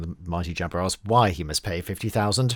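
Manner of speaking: plain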